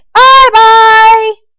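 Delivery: high-pitched squeaky voice. Narrator reading a story, a snow bear calling goodbye in a high squeaky voice. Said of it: "and a high squeaky voice calling to her".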